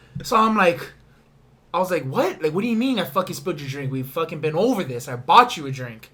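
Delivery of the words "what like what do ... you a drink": put-on, irritated, annoyed, heated retort. Retelling a bar argument with a drunk man: imitating own irritated retort. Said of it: "I was a little irritated".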